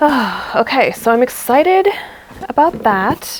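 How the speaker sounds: slow, pleased, contented sigh. Showing a dress being sewn, with a happy sigh. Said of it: "*happy sigh*".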